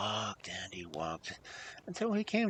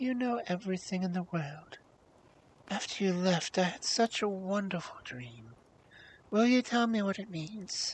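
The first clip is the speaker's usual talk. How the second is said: gently coaxing, sweet, honeyed, high voice; 6 semitones higher than usual. Narrator reading the beautiful girl stroking his head, in a sweet, coaxing voice. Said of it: "said in a sweet, coaxing voice".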